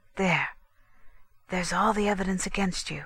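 hoarse, husky whisper. Reading a story aloud, one character hands another the evidence against her: hoarse whisper. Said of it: "whispered Constance hoarsely".

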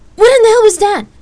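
horrified scream, very high-pitched and very loud. Danielle, as lightning strikes the plane and it lurches, shouting in horror. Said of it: "Danielle shouted in horror".

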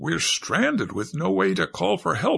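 crying out in a high, swooping outcry. Narrator reads a stranded character's line after the relay station is gone, crying out. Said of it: "cried Catherine".

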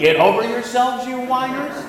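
grumpy, scolding, cranky yell rising high. Mocking the other speaker's plan to scold crying people: imitating a cranky yell.

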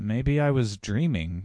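slow, drawn-out, indistinct mumble. A narrator reads a woman in a car, less sure of herself, mumbling. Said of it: "she mumbled".

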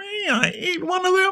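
very high, begging, pleading voice. Reading a story aloud, the kitten asks its question in a pleading voice. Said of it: "Asked the kitten in a pleading voice".

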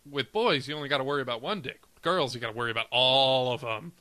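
usual speaking voice

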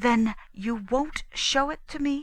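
high voice, desperately controlled, barely keeping composure. A narrator reads a woman's overheard line in a quarrel, desperately controlling herself. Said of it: "in the voice of a woman desperately controlling herself".

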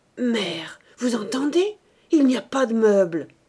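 stammering nervously. A priest, flushed with anger, turns to his mother: anxious stammer. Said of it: "il balbutia d'une voix anxieuse".

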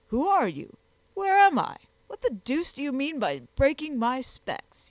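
loud, high crying out, exclaiming. A man, finding himself among strangers, exclaims at his hosts. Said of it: "he exclaimed".

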